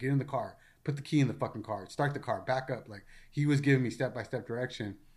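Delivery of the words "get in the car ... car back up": mock military barking, rapid successive commands. Retelling a phone call during shooting, imitating a Marine barking orders. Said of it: "he literally went into Marine mode".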